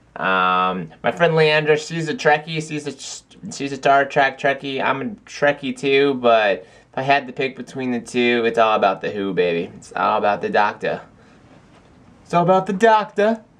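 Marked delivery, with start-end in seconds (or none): 9.8-13.4 bad, terrible put-on British accent. A Doctor Who fan tries a terrible British accent. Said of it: "That was that was a terrible accent".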